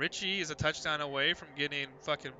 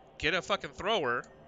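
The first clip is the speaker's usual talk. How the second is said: ordinary talk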